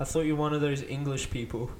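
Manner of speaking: ordinary delivery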